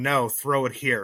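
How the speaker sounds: ordinary talk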